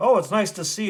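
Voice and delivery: very loud, high-pitched, sarcastic. Recapping a story where a man greets a colleague back at work: retelling a sarcastic greeting. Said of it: "He's all sarcastic".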